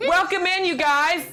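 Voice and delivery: put-on New York Bronx accent. Welcoming people in during an acted scene: Bronx accent. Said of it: "She's Bronx".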